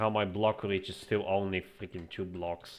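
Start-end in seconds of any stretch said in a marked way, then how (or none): none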